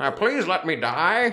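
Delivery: put-on slow, high elderly voice. Imitating a character who sounds like Jimmy Stewart: Jimmy Stewart voice. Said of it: "she does this voice that sounds like Jimmy Stewart".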